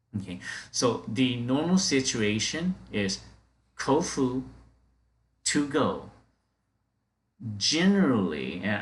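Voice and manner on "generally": generally stressed, louder, with rising pitch. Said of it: "I have to really stress on the word generally".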